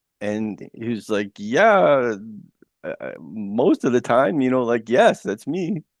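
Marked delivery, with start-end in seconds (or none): 1.4-5.8 acted-out sarcasm, with a drawn-out "yeah". Retelling how God answered being asked who he was: imitating a sarcastic reply. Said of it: "kinda being sarcastic".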